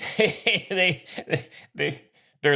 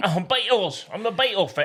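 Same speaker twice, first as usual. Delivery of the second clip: put-on Scottish accent, much higher pitch; 3 semitones higher than usual. Asked about his British accent, the speaker switches to a Scottish accent. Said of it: "Go Scottish here".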